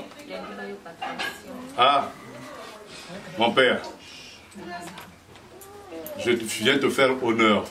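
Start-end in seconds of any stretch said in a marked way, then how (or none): 1.8-7.6 low, measured, formal tone. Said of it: "vous dites à votre papa".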